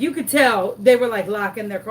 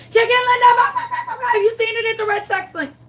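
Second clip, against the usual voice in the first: mock very high, frantic raving scream, rattled off fast; 13 semitones higher than usual. Retelling asking a neighbor in the street about a lost chicken: retelling a frantic scream. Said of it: "as I scream".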